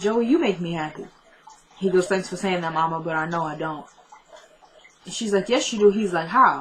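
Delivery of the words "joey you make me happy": put-on near-tears tenderness, on the edge of crying. Speaker retelling a mother's reply to Joey, imitating someone near tears. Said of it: "she's about to start crying too".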